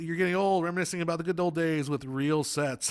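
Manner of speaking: usual speaking voice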